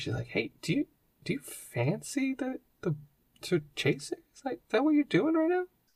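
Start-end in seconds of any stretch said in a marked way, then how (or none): 0.3-4.2 hushed whisper, much higher, slower. Narrating a character whispering a question to the reader, whispering. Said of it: "whispers to you".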